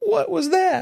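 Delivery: very high, startled, caught-off-guard squeak. Acting out YouTube flagging a word: Barney Fife voice. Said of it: "that I read in my voice there".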